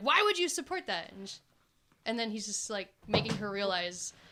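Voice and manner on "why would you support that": put-on very high, loud, raised yell. Retelling a Wonder Woman scene, imitating Wonder Woman yelling at a man. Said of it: "and she's just yelling at him".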